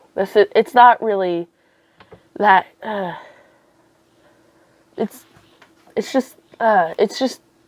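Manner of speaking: stumbling, halting, stuttering, restarting the words. Speaker struggles to sum up a film's scenes, stuttering. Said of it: "I'm sorry, I'm stuttering".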